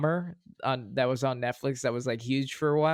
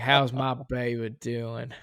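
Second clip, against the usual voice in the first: put-on bad Southern accent. Quoting a movie line, imitating Nicolas Cage's bad Southern accent. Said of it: "And he's like".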